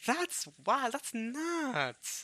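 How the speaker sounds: very high, loud voice crack, "nuts" drawn out. Reacting while telling a story about Rosa and Maria, voice cracking. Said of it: "That was a big voice crack".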